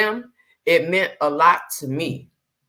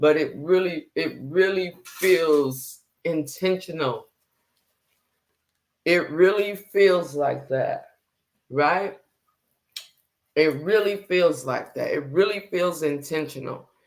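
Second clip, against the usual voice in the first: holding back emotion, fighting tears; 3 semitones lower, 4 dB quieter than usual. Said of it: "I'm trying not to get emotional right now".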